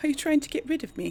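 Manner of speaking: horrible fake, high fantasy English accent. Voicing a game character answering an order, in a bad fantasy english accent. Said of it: "really horrible sort of fantasy English accent that I'm doing".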